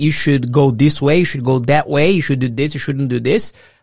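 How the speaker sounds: ordinary talk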